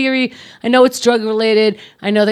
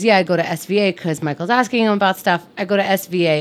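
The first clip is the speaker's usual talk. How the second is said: ordinary talk, nothing marked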